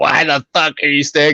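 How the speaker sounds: put-on crazy, raspy, high old woman smoker voice. Speaker retells what a chain-smoking old lady asked them: imitating a raspy chain smoker. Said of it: "really raspy voice of like a chain smoker".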